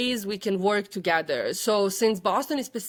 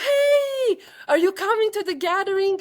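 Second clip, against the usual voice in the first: mock shrill, very high, loud, drawn-out call; 12 semitones higher, 5 dB louder than usual. Retelling calling out to a girl carrying a sign: imitating own screaming. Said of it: "I started screaming at her".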